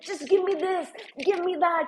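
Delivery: anxious little shout. Retelling own anxious demands for food during the race: imitating someone shouting.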